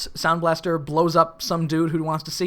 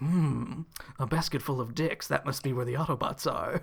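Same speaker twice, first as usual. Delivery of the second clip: hushed, soft, villainous evil robot voice; 3 semitones lower, 8 dB quieter than usual. Recapping a scene where Megatron reacts to the find: Megatron voice. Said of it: "You sound like Vegeta when you do the Megatron voice".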